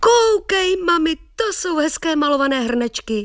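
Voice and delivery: crying out in a very high voice. A boy calls out to his mother, exclaiming. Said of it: "vykřikl Střapatka".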